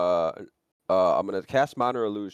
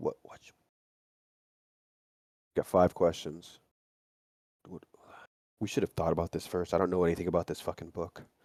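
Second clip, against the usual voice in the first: quiet, hushed whisper; 4 dB quieter than usual. Conferring with companions hidden in the bushes, whispering. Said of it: "I'm whispering".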